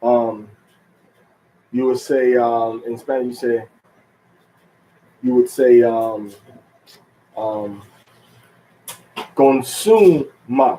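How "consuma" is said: consuma drawn out very slowly, su stressed. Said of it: "So you put the accent and then one syllable".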